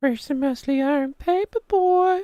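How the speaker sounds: shrill, very high cartoon old-man voice. Saying they almost sounded like him, doing a Family Guy old man voice. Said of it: "the old man from um Family Guy".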